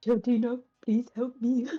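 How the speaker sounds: whispered aside. Player's character asks Shieldina for help after refusing it, whispering in character. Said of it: "And he'll whisper to Shieldina".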